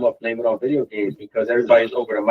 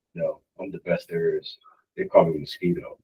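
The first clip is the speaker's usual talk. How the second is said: dry put-on doctor voice, lower and quieter; 6 semitones lower, 7 dB quieter than usual. Retelling what the doctor said at a physical, Clear Eyes commercial voice. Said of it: "He's like".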